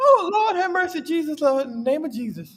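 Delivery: very high-pitched, frantic, panicked, acted out. Mocking how arrested people call on God: imitating panicked praying. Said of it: "every time something happen, they".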